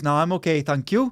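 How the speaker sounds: put-on Welsh accent voice. Acting out what a plumber in your house says, in a Welsh plumber voice. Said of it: "I like how you did the Welsh plumber voice".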